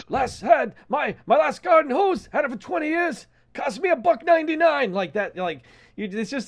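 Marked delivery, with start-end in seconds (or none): 0.1-4.9 very high, passionate, indignant griping rant. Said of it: "he's just going off in that same tone".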